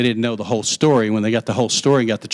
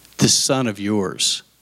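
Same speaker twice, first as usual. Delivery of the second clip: dripping with disdain, scornful; 2 semitones lower than usual. Acting out the older son's words to his father: reading with disdain. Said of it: "You hear the disdain in this?".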